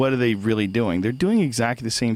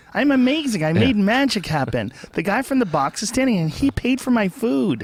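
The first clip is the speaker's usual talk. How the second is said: put-on girl voice, pitched higher; 12 semitones higher than usual. Acting out the girl on the date, imitating the girl. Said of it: "It's a perfect impression".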